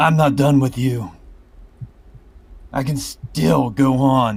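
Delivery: loud, high defiant yell. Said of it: "he'd still be yelling out".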